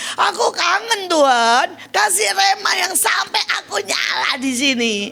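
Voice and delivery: loud shouted cry.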